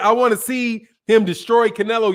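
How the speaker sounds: plain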